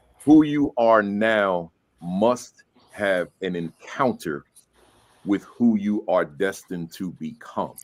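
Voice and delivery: slow, measured, deliberate word-by-word delivery. Reading someone's quote aloud so everyone hears it, reading slowly. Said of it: "I'm gonna read it slow".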